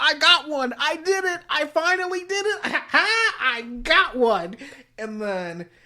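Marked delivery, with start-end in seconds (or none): 0.0-4.6 very high, shrieking, screaming yell. Retelling a scene where Kogoro Mori runs out of his office: imitating Kogoro Mori screaming. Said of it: "comes running out of his office screaming".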